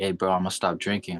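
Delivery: ordinary talk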